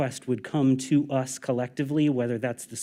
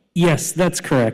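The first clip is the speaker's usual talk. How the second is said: loud, shouted call; 4 semitones higher, 7 dB louder than usual. On a call where the other side can't hear clearly, confirming an answer, shouting. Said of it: "sorry for shouting".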